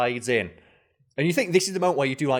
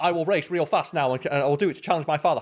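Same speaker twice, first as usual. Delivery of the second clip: ordinary talk, nothing marked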